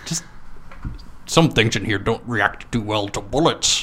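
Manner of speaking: soft put-on Scottish accent. Quoting a favourite movie line, use a fake Russian-Scottish accent. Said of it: "Slash Scottish".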